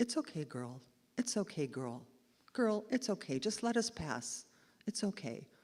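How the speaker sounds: play-acted gentle, really sweet, soothing, calming voice. Retelling how a man in the car spoke to a trumpeting elephant, mimicking a really sweet voice. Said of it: "he goes into this really sweet".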